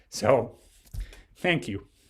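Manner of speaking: tearful, choked-up voice catching with tears. Thanking a mentor for his part in one's path, tearing up while talking. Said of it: "and I'm tearing up now talking to you".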